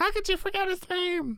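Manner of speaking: very high, non-shrill screaming fangirl shriek.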